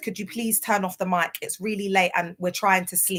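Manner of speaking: usual speaking voice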